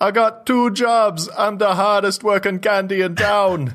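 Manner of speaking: put-on thick Jamaican accent pitched very high. Recalling a guy promoting cough-remedy candies; heavy Jamaican accent. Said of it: "this guy with this heavy Jamaican accent that was saying".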